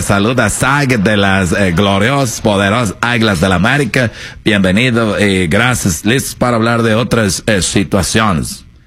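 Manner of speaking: put-on Portuguese accent. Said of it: "habla como portugués".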